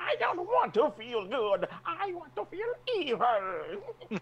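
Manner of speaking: very high, swooping helium cartoon villain voice. Quoting a villain who complains it's hard to be scary, helium-voiced villain. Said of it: "It's hard to be scary when you talk like this".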